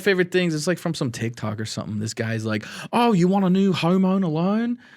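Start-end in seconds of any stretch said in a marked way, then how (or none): 2.9-4.8 slow, high-pitched put-on Australian accent. Retelling a funny TikTok clip to friends, Australian accent. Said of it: "these Australian guys having a conversation".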